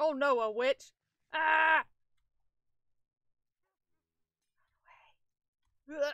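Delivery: in a panic. Spotting a witch on the first night in the game, panicking. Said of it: "I'm panicking".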